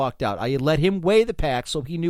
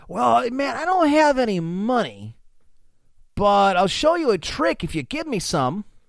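California surfer voice, pitched up; 7 semitones higher than usual. Retelling a hippie's reply to the seller, california surfer guy voice. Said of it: "even talk like a California surfer guy".

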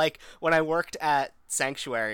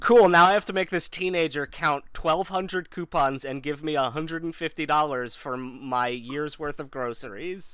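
ordinary talk

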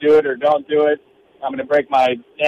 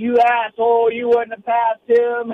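acted high yell, each word dragged out; 8 semitones higher than usual. Retelling a race podium moment, imitating own past shout. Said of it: "And I yelled".

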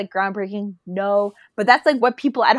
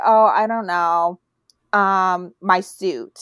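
very slow, dismissive brush-off tone; 3 semitones lower than usual. Retelling an interviewer's question and the curt answer: imitating Hugh Grant being dismissive. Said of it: "He gave her the most shut down".

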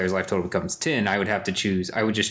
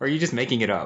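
ordinary delivery

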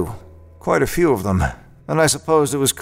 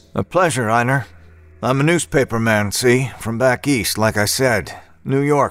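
plain reading voice

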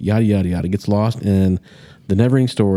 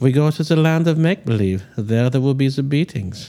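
put-on gentle German-accented host voice, pitched higher; 6 semitones higher than usual. Joining the joke about the old bookstore man: German Mister Rogers voice. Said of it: "He's like German Mister Rogers".

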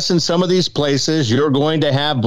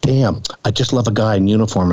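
put-on sweetest voice, lower pitch; 4 semitones lower than usual. Retelling stopping a foot from them before going in, in a put-on sweetest voice. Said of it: "I put on my sweetest voice".

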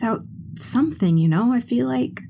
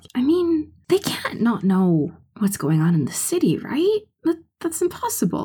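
secretive, lowered, confidential voice. Continuing a private talk with another character in a tavern: hushed tone. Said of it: "In a more hushed tone".

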